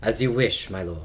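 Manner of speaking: low, deep, smooth put-on voice. Working out a non-British voice for a character: deep smooth voice. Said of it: "a deeper voice? ... Something, like, smooth".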